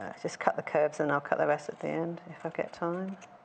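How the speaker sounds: soft, low muttering under breath.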